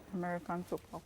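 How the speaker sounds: half-whispered, barely audible, very quiet. Giving an answer on her turn in a game: half-whispering. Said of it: "because she's whispering now".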